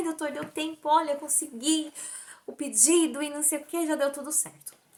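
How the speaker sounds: high, happy, excited rush of words.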